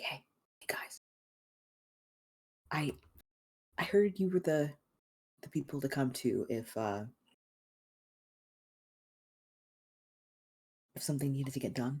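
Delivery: soft, hushed half-whisper throughout. An unsocial woman walks over to the group and speaks to them, half-whispering. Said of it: "she whispers to you".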